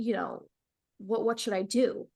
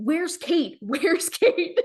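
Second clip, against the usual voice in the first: put-on screaming, high-pitched and very loud; 7 semitones higher, 6 dB louder than usual. Recalling voices on the intercom calling her name, imitating people screaming. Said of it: "And they're like screaming".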